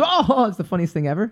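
put-on, forced fake laughter through the words. Imitating people who laugh at a joke that isn't funny: imitating fake laughter at a joke. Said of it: "say something that's really not funny, but everyone goes".

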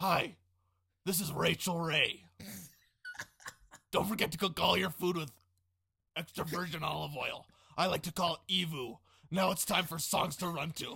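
low gravelly put-on voice. Introducing the next segment as asked: Rachel Ray impression, low and gravelly. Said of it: "try it once like Rachel Ray".

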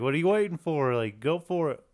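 put-on loud, urging, encouraging yell. Retelling how a character yells up at another fighter: imitating someone yelling. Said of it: "he yells up at Goku".

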